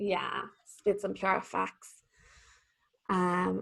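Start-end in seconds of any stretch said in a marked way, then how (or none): 0.0-2.0 put-on soft, slow, heavy Dublin accent. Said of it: "that was a Dublin accent".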